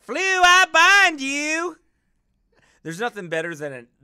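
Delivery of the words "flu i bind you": very high, very loud, slow Southern lady drawl. Joking about witches binding people, imitating a southern lady. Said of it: "a Southern lady saying that".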